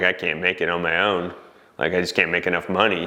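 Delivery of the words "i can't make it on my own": usual speaking voice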